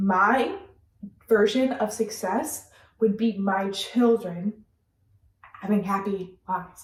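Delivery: slightly emotional, heartfelt voice, feeling welling up. Speaker saying all they care about is being a mother, getting emotional. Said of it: "I'm getting a little emotional".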